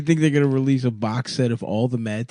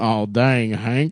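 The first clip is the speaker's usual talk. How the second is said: bad put-on cartoon character voice. Quoting a King of the Hill scene, doing a terrible Bill Dauterive voice. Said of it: "That's a terrible Bill".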